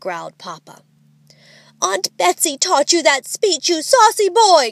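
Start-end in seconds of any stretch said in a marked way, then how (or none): 1.8-4.7 high, exclaimed outcry, crying out. Narrator reading Mama calling after her son as the children drive off; crying out. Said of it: "cried Mama".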